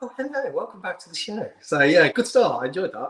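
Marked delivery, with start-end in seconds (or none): 0.0-1.5 polite, soft, high put-on telephone voice. Teasing the show's host about switching from their normal voice, imitating a telephone voice. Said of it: "You went from like your normal voice to like".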